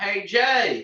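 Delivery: loud, high hillbilly holler. Retelling someone shouting your name while you stood in left field, big redneck voice. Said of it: "in like this big redneck voice".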